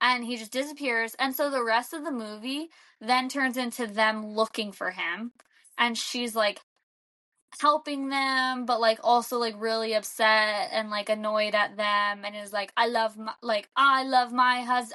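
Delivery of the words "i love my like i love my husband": attempted, bad put-on Brooklyn accent. Retelling a movie character's line, attempting a brooklyn accent. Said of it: "I can't do a Brooklyn accent".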